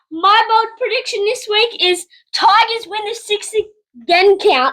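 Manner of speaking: breaking voice, cracking mid-line. Asked for this week's bold prediction on the show, voice cracking. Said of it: "I got a voice crack".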